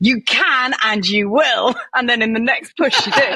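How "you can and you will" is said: sudden, booming, slow, big-voiced declaration. Retelling the booming voice Ben heard during a birth; booming voice. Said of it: "I just heard this booming voice".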